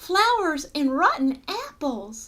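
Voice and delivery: ordinary talk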